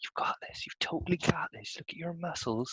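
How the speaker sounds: soft, close-up, encouraging whisper. Whispering encouragement into a friend's ear during arm wrestling: whispering in character. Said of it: "I'm just whispering in his ear".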